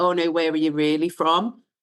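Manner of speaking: usual speaking voice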